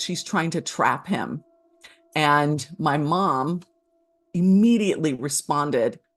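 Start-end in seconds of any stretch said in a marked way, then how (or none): none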